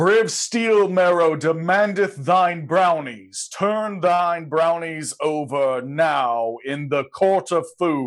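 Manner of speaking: herald-style, proclaiming like a town crier. Game player speaking in character after casting Thaumaturgy; voice raised as loud as possible. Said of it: "raise my voice as loud as I can".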